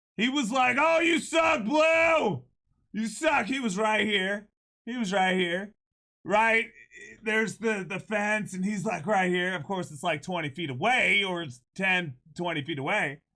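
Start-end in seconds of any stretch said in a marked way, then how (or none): 0.7-3.4 put-on high, drawn-out jeering heckling yell. Retelling how a fan on a crutch heckled the umpire: imitating a fan yelling. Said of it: "He was just yelling at me".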